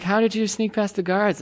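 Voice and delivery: ordinary talk, nothing marked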